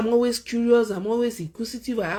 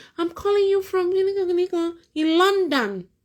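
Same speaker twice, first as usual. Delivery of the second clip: put-on woman's voice, much higher; 8 semitones higher than usual. Retelling what a man said while he imitated a woman, mimicking a woman's voice. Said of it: "Imitating a woman's voice".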